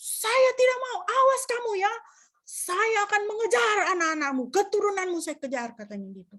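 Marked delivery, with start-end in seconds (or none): 0.0-4.5 put-on high, yelling demon voice like an old man. Speaker retelling an exorcism, voicing the demon answering back: retelling a demon's shout. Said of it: "Teriak dia".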